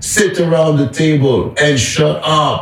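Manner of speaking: very high screaming, acted out. Retelling a muscular teacher ordering students entering class on day one: retelling a scream. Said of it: "he just screamed, raised his voice".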